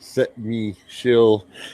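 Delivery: slow, deliberate, careful word-by-word enunciation. Speaker keeps tripping over a word and tries it again: saying it slower. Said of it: "I have to say that slower".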